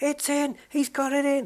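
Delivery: mock very high, loud, thrilled race commentator voice. Imitating Murray Walker commentating on snooker: imitating Murray Walker's excited commentary. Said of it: "he goes".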